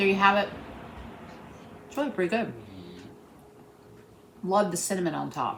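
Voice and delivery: talking with mouth full. Tasting a cheesecake just made, talking with mouth full. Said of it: "my mouth full".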